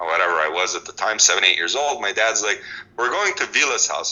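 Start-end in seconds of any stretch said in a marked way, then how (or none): 3.0-4.1 put-on heavy Russian accent, laid on thick. Recalling childhood, the speaker quotes their dad in a thick russian accent. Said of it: "with this r- thick Russian accent".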